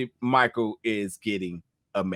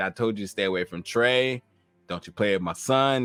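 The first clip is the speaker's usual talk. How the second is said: usual speaking voice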